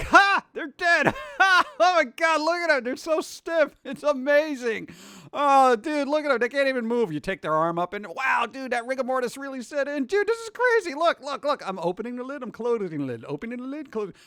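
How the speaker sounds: high, giddy, gleeful laughing chatter. A speaker acts out people gleefully laughing at a funeral, mock laughing. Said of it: "laughing at funerals are like laughing like".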